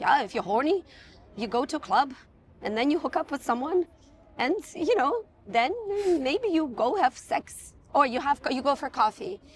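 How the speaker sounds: English spoken with a put-on Danish accent. Retelling an interviewee's answer about dating, in her Danish accent. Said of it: "she said it with a Danish accent".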